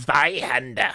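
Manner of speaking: mock German pronunciation. Saying a weapon name, joking about fantastic german: mock german pronunciation. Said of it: "my German is fantastic".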